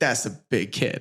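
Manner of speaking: put-on New York accent. Imitating what Joe Pesci says about a son: Joe Pesci impression. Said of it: "I can't do the accent as well".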